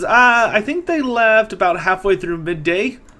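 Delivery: put-on high, loud, bright young girl voice.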